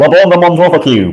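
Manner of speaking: put-on Mancunian accent. Retelling how Nick came up with a brand name, Nick's Mancunian accent. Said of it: "he has a Mancunian accent".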